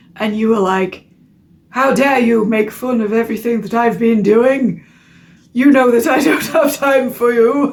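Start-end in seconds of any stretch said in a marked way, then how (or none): 1.7-7.7 big, pompous, grandiose, self-important delivery. Acting out someone snapping at a friend who asks for help: Nathan Barley voice. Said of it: "Why am I hearing this in the voice of".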